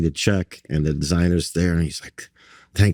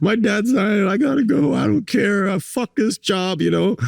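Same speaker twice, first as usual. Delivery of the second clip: very high-pitched crying outburst. Recounting telling a designer his dad was dying, the speaker retells own crying. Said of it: "And I'm like crying and I'm like".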